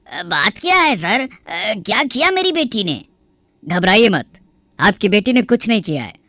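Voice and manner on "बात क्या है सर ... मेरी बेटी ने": high, startled, anxious, worried voice. A father opens the door to police asking for his daughter; surprised. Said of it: "आवाज सुनकर [name] के [name] प्रकाश शर्मा दरवाजा खोलते हैं तो सामने पुलिस को देखकर हैरान रह जाते हैं। / आवाज सुनकर [name] के [name] प्रकाश शर्मा दरवाजा खोलते हैं तो सामने पुलिस को देखकर हैरान रह जाते ह".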